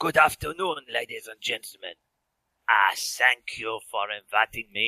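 over-the-top, outrageous put-on French accent. A guest character greets the ladies and gentlemen after being invited, outrageous French accent. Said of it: "he had an outrageous French accent".

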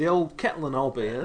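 put-on slight cockney accent. Voicing a character admiring a watch: bit of cockney. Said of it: "that was a bit of cockney".

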